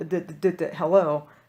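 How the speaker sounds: very slow, repeated stuck d sound in hello. Retelling trying to answer the phone: imitating own past stutter. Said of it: "I would start to stutter, like".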